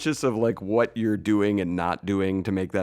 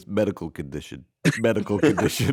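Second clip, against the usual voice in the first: put-on New York Upper West Side voice and attitude. Quoting a favourite comedy bit about New York accents: imitating Armisen's Upper West Side voice. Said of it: "I love his one of doing Upper West Side. He goes".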